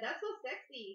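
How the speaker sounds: put-on Indian accent. Reading a flirty message aloud in that voice: put-on Indian accent. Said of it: "you're reading it in that voice".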